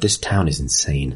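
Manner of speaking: muttering under breath. A player's character, after a failed check, reacts, muttering under her breath. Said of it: "She sort of mutters under her breath".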